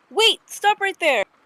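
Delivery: loud, very high shouted call. In a role-play scene, a character shouts to stop a girl in a pig mask. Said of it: "as you shout that out".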